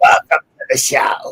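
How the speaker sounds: voice worn and strained from loud talking. Greeting the show after talking loudly all evening: sounding like Harvey Fierstein. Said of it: "I kinda sound like, uh, Harvey Fierstein".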